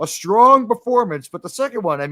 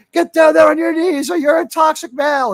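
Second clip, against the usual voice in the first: mock shrill, raised yell; 8 semitones higher, 5 dB louder than usual. Retelling an imagined audition where a director screams at you: imitating a director screaming. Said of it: "just starts screaming at you".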